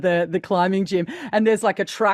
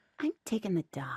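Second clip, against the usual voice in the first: very soft, hushed delivery; 13 dB quieter than usual. Trying a first impression of a film line: Jennifer Coolidge voice. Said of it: "we're doing Jennifer Coolidge".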